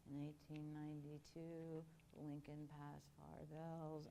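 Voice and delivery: very quiet, low, droning, flat one-note monotone. Imitating a favorite movie's history teacher speaking to his class, complete monotone. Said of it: "it was a complete monotone".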